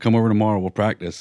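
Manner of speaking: ordinary talk, nothing marked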